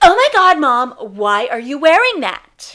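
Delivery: booming, very loud, really loud outcry. A mother retells how her daughter calls her out: imitating Cece's really loud voice. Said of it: "in her really loud voice".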